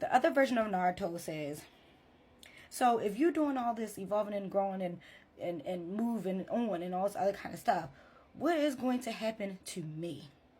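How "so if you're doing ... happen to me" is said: ordinary delivery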